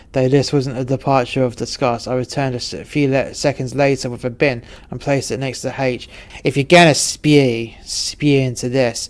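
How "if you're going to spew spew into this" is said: slow, louder, pathetic, bad American accent. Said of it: "I said with a pathetic American accent".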